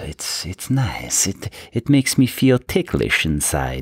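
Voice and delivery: poor put-on Italian accent. Presenting reward figures, the speaker does a chef's kiss in a bad italian accent. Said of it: "that wasn't a good Italian accent".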